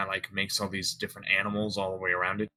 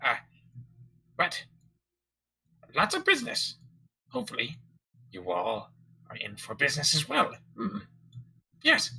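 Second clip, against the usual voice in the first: put-on gnome merchant voice, higher; 6 semitones higher than usual. Voicing a fussy gnome shopkeeper greeting the players: gnome shopkeeper voice. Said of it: "he sees each and every one of you and says".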